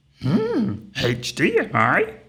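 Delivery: very high, very slow, drawn-out, swooping voice. Telling a Yoda joke, delivering the punchline as a Yoda impression. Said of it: "I've never done a Yoda impression before".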